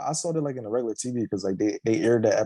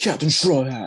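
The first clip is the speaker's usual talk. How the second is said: put-on anime dub voice, higher and louder; 4 semitones higher, 5 dB louder than usual. Showing how Smoker sounds in the English voice: Smoker English dub voice. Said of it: "I do like Smoker, uh, English voice".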